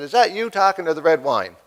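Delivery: ordinary talk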